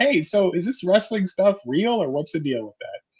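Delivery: high-pitched, teasing yell from the background. Retelling a brother heckling from the background: imitating someone yelling from the background. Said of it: "Owen in the background yell".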